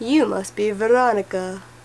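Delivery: creepy, eerie vampire character voice. Telling a story, the bitten father greets the girl in a creepy Dracula voice. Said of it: "his creepy voice say".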